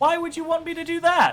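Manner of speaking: very coy, teasing voice. A character answers a player who asks her to petrify their friend Lily; coy voice. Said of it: "She says it in a very coy voice".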